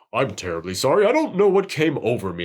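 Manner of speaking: very deep, mature-sounding voice. Quoting the Toxic Avenger helping a police officer up, in his deepest, most mature voice. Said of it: "Like the deepest, like most mature voice".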